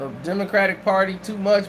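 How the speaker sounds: ordinary talk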